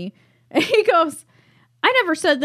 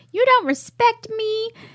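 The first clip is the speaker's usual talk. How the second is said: put-on angry, pointed, pitched-up tone; 7 semitones higher than usual. Retelling what an angry girlfriend in a show said at dinner: imitating an angry woman. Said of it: "angry as fuck, and she's like".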